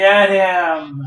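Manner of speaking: enthusiastic, eager voice, "him" drawn out. Reacting to a video with mock enthusiasm: enthusiastic. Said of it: "You hear that enthusiasm in my voice".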